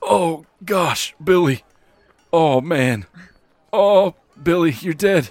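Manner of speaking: very high, slow, loud, grieving wail. Voicing a buddy reacting to his friend Billy dying: grieving buddy of a dead man. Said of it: "His buddy is sitting there going".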